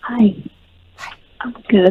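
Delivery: hushed whisper. A caller answers the host's greeting, whispering. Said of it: "Why are we whispering?".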